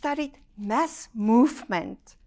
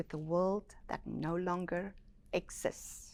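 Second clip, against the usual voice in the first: very quiet, slow, low and hushed finish; 4 semitones lower, 12 dB quieter than usual. A speaker quotes someone's saying to listeners so they can take it in, spoken slowly. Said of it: "I said that slowly".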